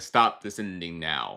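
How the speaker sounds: low, slow, firm commanding tone.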